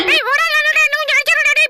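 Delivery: high, loud, pleading voice with laughter.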